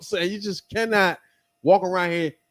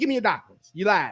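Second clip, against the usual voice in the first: put-on sassy, attitude-filled tone. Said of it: "she went into a joint and said".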